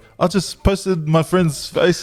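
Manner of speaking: slow, high-pitched, laughing delivery.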